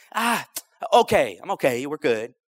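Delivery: very slow, offhand, nonchalant delivery. Retelling what someone mentioned in passing: imitating a nonchalant reply. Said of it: "just real nonchalantly".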